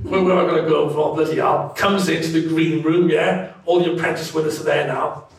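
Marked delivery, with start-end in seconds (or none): 0.0-1.7 grumpy, grumbling, very irritable delivery. Retelling how Lord Sugar walked in: imitating grumpy Lord Sugar. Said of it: "grumpy as hell".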